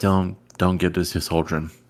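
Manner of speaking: quiet half-whispered voice. A character hands Lorraine two weapons and warns her, half-whispering. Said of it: "I'm gonna whisper to her".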